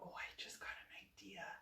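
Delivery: slow, very hushed, secretive, barely-there whisper. Announcing a sudden idea while painting doors: whispering. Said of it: "You don't have to whisper".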